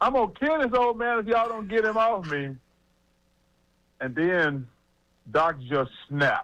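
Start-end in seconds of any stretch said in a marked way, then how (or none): 0.0-2.6 enraged, high, furious, acted-out scream. Telling a story about a third quarter, act out the player's threat, retelling someone's screaming. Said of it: "He's still screaming".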